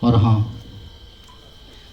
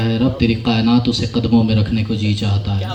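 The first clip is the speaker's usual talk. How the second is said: ordinary talk, nothing marked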